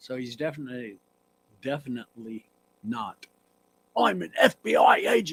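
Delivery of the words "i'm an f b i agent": very high, loud, drawn-out delivery. Imitating an actor's line in a movie: imitating Keanu Reeves's accent. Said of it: "Did you have that accent?".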